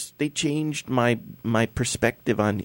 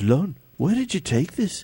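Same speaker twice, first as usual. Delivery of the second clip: put-on English accent, pitched up; 6 semitones higher than usual. Retelling what Steve said about the photo: English accent imitating Steve. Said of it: "I'm just trying to be English".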